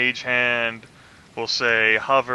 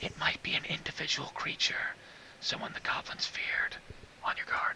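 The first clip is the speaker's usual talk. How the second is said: very quiet, barely audible whisper; 5 semitones higher, 15 dB quieter than usual. Voicing a character backing up quietly, warning a companion: whispering in character. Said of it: "whispering to Roldar".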